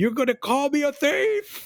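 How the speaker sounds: mock sudden, wild, rising, high-pitched scream. Retelling a client in a book jumping up with a knife: imitating someone screaming. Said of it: "jumps up brandishing a knife and screams something like".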